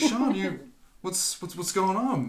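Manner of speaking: high-pitched, concerned fatherly voice. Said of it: "he comes over, he's like".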